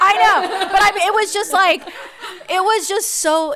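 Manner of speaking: high, loud, choked-up voice, close to tears.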